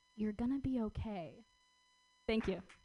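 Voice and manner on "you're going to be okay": put-on whisper. Retelling what he said during a goodbye hug: imitating a whisper. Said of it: "he whispers in my ear".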